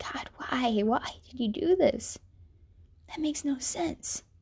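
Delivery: sorrowful, grieving, pleading tone. Retelling praying after a breakup, imitating a sorrowful plea. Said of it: "but in a sorrowful way".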